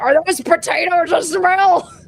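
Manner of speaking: rough, gruff, loud male voice. Narrator voicing a man heard through a floor grate, in a gruff male voice. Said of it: "you hear a gruff male voice say".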